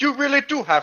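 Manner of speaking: put-on slight Jamaican accent. Voicing a character, the speaker drifts into a slight Jamaican accent. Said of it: "I'm going Jamaican almost".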